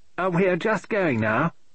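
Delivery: sugary, polite, sweet tone, slightly high. A blonde woman speaks up under a policeman's suspicious gaze, sweetly. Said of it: "said the blonde, sweetly".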